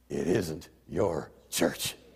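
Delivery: quiet, soft, hushed whisper. Retelling how god answered a prayer: imitating a whisper. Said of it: "And God whispered".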